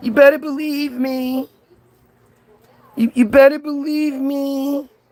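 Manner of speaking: teary fake sobbing. Mocking a religious figure who only cried: mock crying as Jesus. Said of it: "All Jesus did was cry".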